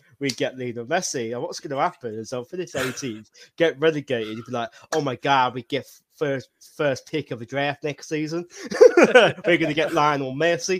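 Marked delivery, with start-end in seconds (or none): 5.0-10.8 very loud, bad fake American accent. Imagining their own reaction after finishing 18th and getting relegated, in a dreadful american accent. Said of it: "the absolutely dreadful American accent".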